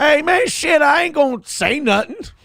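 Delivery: put-on very high-pitched, drunk-sounding voice. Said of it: "He's hammered talking to his lawyer on the phone going".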